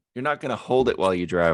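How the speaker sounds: usual speaking voice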